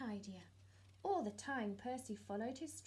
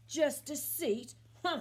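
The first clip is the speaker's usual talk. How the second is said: very loud, growly voice; 4 semitones higher, 11 dB louder than usual. Reading a story aloud, voicing a talking stone answering a fox, Percy's growly voice. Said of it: "said the growly voice".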